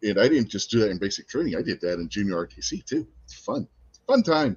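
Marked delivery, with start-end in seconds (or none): 3.2-4.6 dry, sarcastic, pitched-up, insincere fake cheer. Recalling gas chamber drills in training: sarcastic tone. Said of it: "if you didn't catch the tone of voice".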